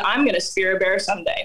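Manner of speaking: normal talking voice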